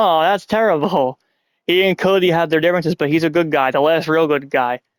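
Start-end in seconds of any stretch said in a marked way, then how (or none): 0.0-1.2 acted-out sarcastic, insincere regret with dry sympathy. Retelling a wrestler smiling at news that a rival is out: imitating Sami Zayn's sarcasm. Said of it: "he sarcastically goes".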